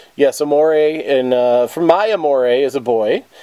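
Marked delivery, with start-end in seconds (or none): none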